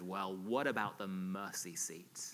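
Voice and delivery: low, mock smug, self-satisfied voice. Retelling what the university chaplain said to a young guy in the chapel, imitating a smug voice. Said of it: "And in a smug voice".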